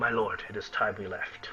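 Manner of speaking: low, hushed whisper, words barely voiced. Narrator voicing a man who goes down to the dwarf: whispering as Sildar. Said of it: "and he whispers".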